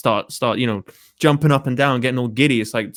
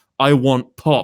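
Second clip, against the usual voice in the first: put-on demanding, grating, obnoxious back-alley London street accent. Mocking kids screaming into the McDonald's microphone, in an obnoxious London accent. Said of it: "in the most obnoxious British back alley fucking London accent there is".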